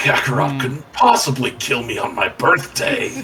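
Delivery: silly animated villain voice. Riffing on a villain's birthday, slipping into an early Vegeta voice. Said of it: "my brain went to early Vegeta".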